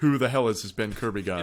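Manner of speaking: ordinary talk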